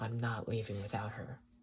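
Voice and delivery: ordinary talk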